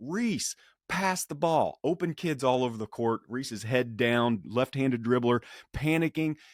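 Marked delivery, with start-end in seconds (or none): 0.0-1.8 put-on, high-pitched, drawn-out yell. Recalling shouting to a kid dribbling on the court, retelling a yell. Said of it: "And I just start yelling".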